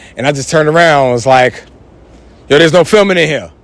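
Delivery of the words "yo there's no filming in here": hard, mad, confrontational, aggressive tone. Telling how he turned to someone filming the class, retelling it mad aggressive. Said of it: "Like, mad aggressive".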